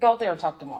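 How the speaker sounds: plain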